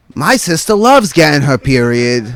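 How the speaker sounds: ordinary talk, nothing marked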